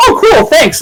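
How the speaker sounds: put-on very high, polite, courteous young Canadian kid voice. Retelling a friend's reply to a street seller: imitating a polite Canadian kid. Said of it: "very polite Canadian kid going like".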